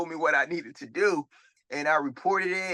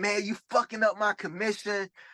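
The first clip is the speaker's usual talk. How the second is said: put-on wild, heated, high-pitched, crazed ranting; 5 semitones higher than usual. Retelling what a man he blocked said when he called back, imitating him talking crazy. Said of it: "like talking crazy".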